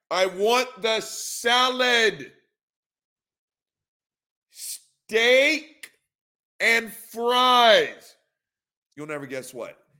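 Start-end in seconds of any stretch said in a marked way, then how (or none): 0.1-8.1 mock slow loud shouting, higher and louder. Acting out a tourist ordering food abroad: imitating slow loud tourist talk. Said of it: "screaming at her and talking one word a fucking second".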